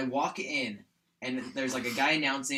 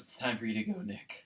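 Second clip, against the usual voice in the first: mock mournful, soft, really sad, sorrowful tone; 3 semitones lower, 4 dB quieter than usual. Retelling what their game character said to a companion: imitating a really sad tone. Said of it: "Like in a really sad tone".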